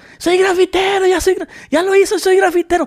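acted-out very high, jubilant, excited yelling. Retelling own past shout after spraying graffiti: imitating own past shouting. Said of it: "y yo empecé a gritar".

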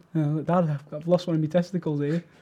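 usual speaking voice

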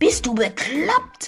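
hissed words. Startled by a stone landing beside him, a character snaps at the thrower, hissing. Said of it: "zischte er".

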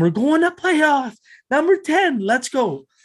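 high, loud, triumphant excited yelling.

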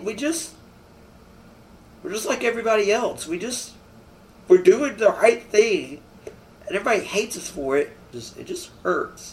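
crying, tearful voice. Talking to an interviewer in a snippet, the speaker is crying. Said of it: "I don't know why I'm crying".

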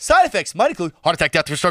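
fast, rattled-off commercial fine-print style. Retelling a Viagra commercial's side effects: imitating a fast commercial disclaimer. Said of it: "they at least go fast".

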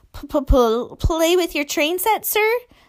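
high, stammering, faltering words. Reading a story aloud, Measle replies about the train set, stammering. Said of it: "Stammered Measle".

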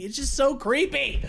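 plain

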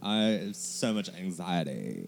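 put-on, swooping, drawn-out Valley girl drawl. Quoting people who misuse mental health terms: imitating a Valley girl voice.

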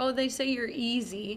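ordinary delivery

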